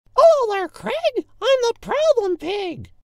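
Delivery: very high-pitched, loud puppet-style voice. In a sketch, a doctor's only option turns out to be a hand puppet: Problem Pig puppet voice. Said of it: "You're blaming the puppet? ... But he is a puppet".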